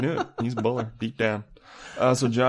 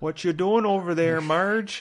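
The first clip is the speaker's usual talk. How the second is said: put-on Minnesota accent, pitched up; 7 semitones higher than usual. Quoting a line from Fargo to the others, in a Minnesota accent.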